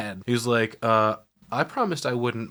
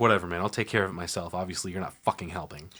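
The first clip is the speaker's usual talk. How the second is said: irritated female voice; 4 semitones lower, 3 dB quieter than usual. Retelling a scene where Katie turns on Mika, mock-pissed-off Katie. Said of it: "Katie's pissed off all over again".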